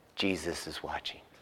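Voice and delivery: small voice, very deep and hushed. Telling a joke, voicing what a woman hears as she creeps into a room: small voice. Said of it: "she hears a small voice".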